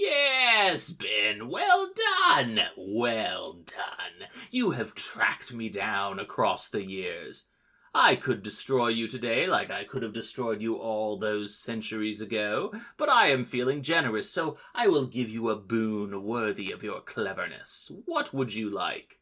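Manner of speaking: mock gloating cyborg villain cackle, swooping pitch. A narrator voices a cyborg who has been tracked down by ben; cackling. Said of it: "he cackles and says".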